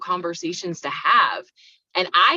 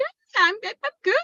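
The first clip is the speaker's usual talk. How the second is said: very high, see-through, fake-casual voice. Mother recalls answering her small children in the car: retelling a high-pitched lying voice. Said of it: "that high pitched".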